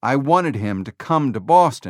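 plain reading voice

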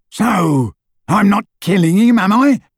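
yelling, pitched high. Narrator voices Crab yelling back at Malfoy, throwing off his arm. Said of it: "yelled Crab".

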